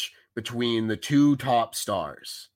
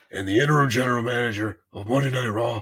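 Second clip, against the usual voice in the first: put-on raspy executive voice. Doing an impression after being told his hoarse voice sounds like John Laurinaitis. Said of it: "that's actually scarily accurate".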